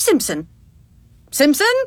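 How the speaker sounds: haughty, lofty, superior tone with a sing-song swoop. Saying a name again at the other speaker's request, a little more haughtily. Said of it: "a little more haughtily".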